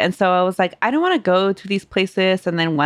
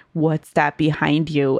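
put-on spooky, scary voice; 3 semitones lower than usual. Recounting a meal when Mateo spoke to Carmen, imitating Mateo's scary-story voice. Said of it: "like his scary story voice".

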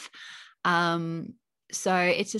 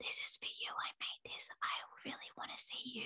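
hushed, very quiet, breathy whisper; 5 semitones higher, 16 dB quieter than usual. Imitating kids leaving offerings in a fairy garden: imitating children whispering. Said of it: "whispering to the fairies".

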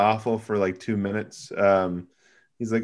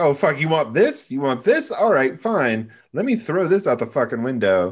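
put-on defiant voice, higher; 5 semitones higher, 3 dB louder than usual. Retelling a horror film scene, imitating Kirsty taunting Frank. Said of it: "and she's like".

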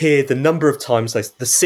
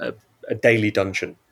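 ordinary talk

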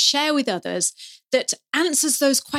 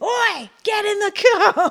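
put-on parent's yell, very high, slow, drawn-out; 10 semitones higher, 3 dB louder than usual. Retelling how parents are heard calling to kids: imitating a parent shouting. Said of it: "New Zealanders don't shout at their kids".

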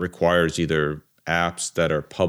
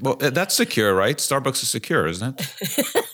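high-pitched, thick mock sarcasm. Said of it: "That's sarcasm".

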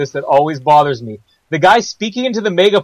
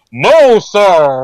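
booming, megaphone-style amplified voice; 2 semitones higher, 4 dB louder than usual. Retelling a Dr. No scene, the speaker voices the guy answering Dr. No in a big amplified voice. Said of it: "there's this big amplified, he's like".

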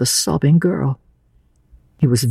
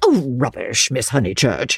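usual speaking voice

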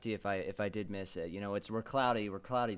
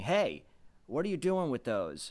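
light, put-on, called-out yell; 4 semitones higher than usual. Retelling the lawyer in Jurassic Park scolding the kids: imitating the lawyer yelling. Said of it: "he was yelling at the kids and saying".

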